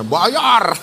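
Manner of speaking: hard, insistent, forceful and pushy. Imitating someone who said bayar aggressively earlier, imitated forceful shout of bayar. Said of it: "Yang ngomong bayar ngegas banget tadi suaranya".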